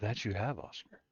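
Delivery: come-hither, seductive, sultry tone. Answering a player who turned into a horse before: seductive tone. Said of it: "Why'd you say it so dis-, seductively?".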